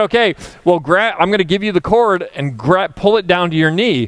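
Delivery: ordinary delivery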